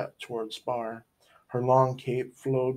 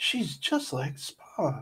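hushed, whispered line; 3 semitones higher, 4 dB quieter than usual. [name] reacts to the woman's words, whispered. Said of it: "whispered [name]".

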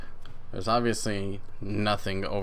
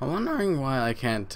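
voice cracks higher; 5 semitones higher than usual. Speaker working out a puzzle aloud, voice cracking mid-sentence. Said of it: "ooh, voice crack".

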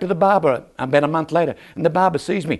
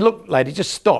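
plain

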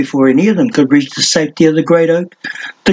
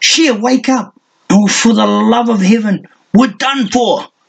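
frantic, desperate shouting, pitched up; 6 semitones higher than usual. A character yells at his silent companion to wake up; yelling desperately. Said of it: "He yelled desperately".

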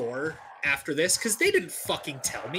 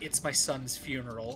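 put-on cold tone, lower and quieter; 4 semitones lower, 7 dB quieter than usual. Retelling a mom's reply while she helped set up: imitating a cold reply. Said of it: "she just kind of coldly looks at me and was like".

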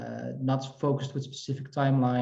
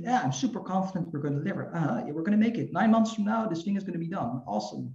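fast, rattled-off fake confidence. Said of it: "Of course, that I didn't believe in that".

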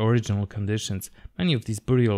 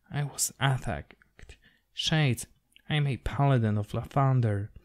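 faint, weak, effortful, strained murmur; 3 semitones higher than usual. A narrator voicing an injured lady who stirs and speaks with obvious effort: effortful murmur. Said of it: "she stirs and murmurs".

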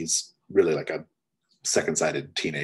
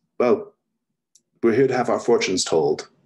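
a little nervous, quick, hurried, pitched up; 5 semitones higher, 7 dB louder than usual. The game master voices Albertina after Greco's remark: a little nervous. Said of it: "she seems a little nervous".

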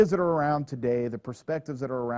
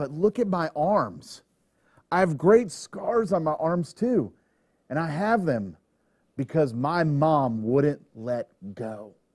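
showing-off tone, full of pride; 2 semitones higher than usual. Retelling what a man said to a reporter, retelling proud words. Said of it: "obvious pride in his face and in his voice".

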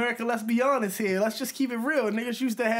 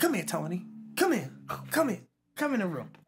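put-on demanding, scary voice, lower; 4 semitones lower, 4 dB quieter than usual. Retelling how his aunt called him into the room: imitating a demanding, scary summons. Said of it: "why she sound so demanding, so scary".

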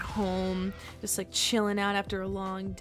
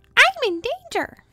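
put-on cartoon kid voice, higher, louder, slower; 13 dB louder than usual. Speaker tries out a voice while people watch: Ralph voice. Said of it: "I can actually do that Ralph voice".

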